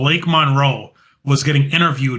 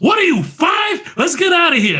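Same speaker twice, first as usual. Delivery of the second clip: play-acted, shrill, very high yell. Retelling how one wrestler yells at another: imitating someone yelling. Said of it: "And she yells at Lyra".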